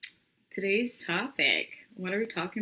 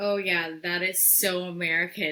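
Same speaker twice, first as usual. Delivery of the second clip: ordinary delivery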